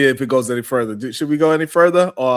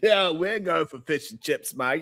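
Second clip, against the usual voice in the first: put-on Australian accent; 4 semitones higher, 7 dB quieter than usual. Mocking a clip of Mika: imitating Mika's Australian accent. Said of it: "when did Mika turn to Australian?".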